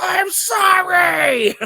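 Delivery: drawn-out, very high, loud scream of pain. Recapping an episode scene where she is in labor, imitating Keiko screaming. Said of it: "she screams".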